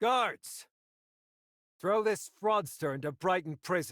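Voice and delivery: commanding, authoritative loud shout.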